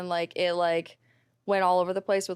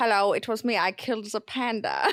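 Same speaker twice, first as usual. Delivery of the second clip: put-on Bavarian accent, slower; 2 semitones higher than usual. Retelling how you voiced a returning character: Bavarian accent. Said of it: "doing it with like a Bavarian accent".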